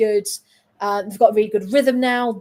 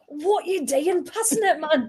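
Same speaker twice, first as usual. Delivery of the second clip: put-on northeast English accent, higher; 6 semitones higher, 4 dB quieter than usual. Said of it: "Don't do accents".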